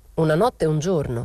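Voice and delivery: ordinary delivery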